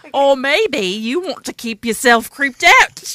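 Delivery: loud, heavy put-on Australian accent laid on thick. Asked to repeat a show intro the British way, in an Australian accent. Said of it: "That was super Australian".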